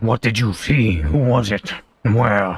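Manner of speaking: low voice. Voicing a character asking questions, in a lower voice. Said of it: "but in a lower voice".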